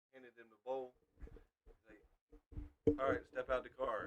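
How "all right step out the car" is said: ordinary talk, nothing marked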